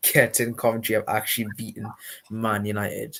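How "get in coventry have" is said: ordinary delivery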